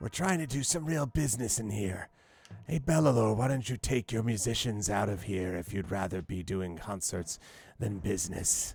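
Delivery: odd, strange nasal, almost raspy voice. Narrating a scene, voicing the masked speaker: nasally raspy Drave voice. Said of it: "He has a strange, nasally, almost raspy voice".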